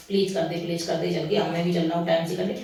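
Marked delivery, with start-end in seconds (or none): none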